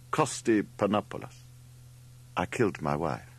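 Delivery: ordinary delivery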